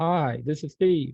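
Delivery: put-on, rough-edged, loud, thick Boston accent. Retell a phone caller introducing himself to you, as a bad Steve Pemberton, deep Boston accent. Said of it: "he has this Boston deep accent".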